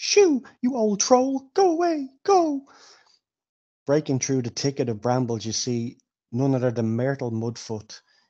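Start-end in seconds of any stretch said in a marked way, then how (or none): 0.0-2.6 very high, frightened, panicked cry. A narrator voices a character chasing off a troll: Myrtle Mudfoot, high and panicked. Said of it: "You then hear a high, panicked voice call out".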